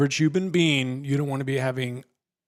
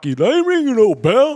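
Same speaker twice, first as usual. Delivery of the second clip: loud, very high-pitched boxer character voice; 11 semitones higher, 9 dB louder than usual. Retelling a man's reaction to finding hair in his soda, in a Rocky voice. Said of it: "He kind of sounded like Rocky".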